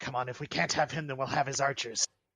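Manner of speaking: words hissed out. Player speaks in character during a tabletop game: Ilix hissing under her breath. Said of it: "hiss under her breath".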